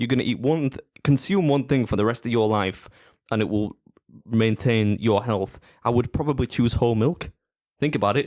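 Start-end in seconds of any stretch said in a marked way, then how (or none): none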